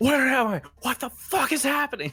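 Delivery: very shrill, very loud, very high panicked shrieking. Voicing a character falling through the air, screaming in panic. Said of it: "screaming the entire time".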